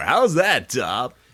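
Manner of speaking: loud radio announcer voice. Teasing the other speaker for not having a letter ready: put-on radio announcer voice. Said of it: "I'll just talk and my radio announcer voice more".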